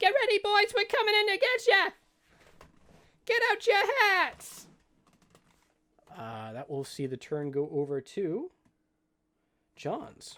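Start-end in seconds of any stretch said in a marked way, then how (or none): 0.0-4.7 very loud, very high, shrill battle cry. Voicing a halfling rushing in with others: voicing a charging halfling. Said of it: "you hear a".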